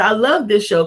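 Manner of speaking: ordinary talk, nothing marked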